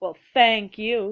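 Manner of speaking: cheeky, sassy tone. Reading a story: a character who just ran into the den says this; sassy tone. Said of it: "he said in a sassy tone".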